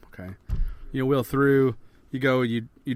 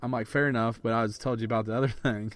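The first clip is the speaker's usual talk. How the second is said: ordinary delivery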